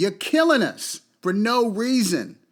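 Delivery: furious, accusing tone with real anger. Answering people who call him so angry, say it angry. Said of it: "You goddamn right I'm angry".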